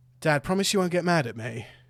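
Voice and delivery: trembling, faltering voice with slight quiver. Turning to his father, a son speaks with a quivering voice. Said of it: "a little quiver in his voice".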